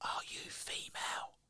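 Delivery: whispered, very quiet and soft. Retelling asking a question through a castle wall: retelling a whisper. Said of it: "Just whisper".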